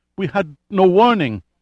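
halting stutter. A panicked man answers an angry man's question, stammering. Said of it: "he stammered".

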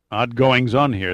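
ordinary delivery, nothing marked

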